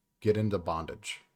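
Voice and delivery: joking deadpan, mock-serious. Suggesting a fix for a sleeping problem: joking with a straight face. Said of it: "You said that with such a straight face".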